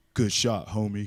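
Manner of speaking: deep bass voice, dropped low. Retelling what a basketball player said after a shot: imitating a deep voice. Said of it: "Did he say it just like that?".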